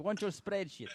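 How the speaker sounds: imitated Russian accent. Imagining how he might have said it instead: Russian accent. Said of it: "if he said it with Russian accent".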